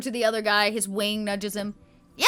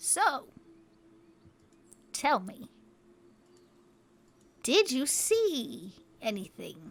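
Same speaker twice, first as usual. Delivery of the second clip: very soft, quiet creature hiss through a beak; 10 dB quieter than usual. Voicing a beaked character questioning the group, hissing through a beak. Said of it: "He kind of hisses at you almost through his beak".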